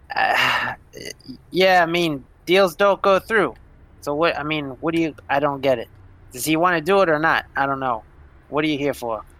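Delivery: unbothered, indifferent tone. Voicing a character with a shotgun who shrugs: shrugging indifference. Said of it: "he just shrugs".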